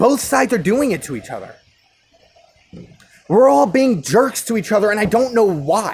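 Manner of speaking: frustrated, worked-up, agitated outburst. Speaker commenting on a sad trend, getting worked up. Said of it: "I'm getting kind of worked up here".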